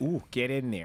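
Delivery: put-on woman's voice with Canadian accent. Retelling what a Canadian woman repeated during sex: imitating a Canadian woman. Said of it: "She just repeated".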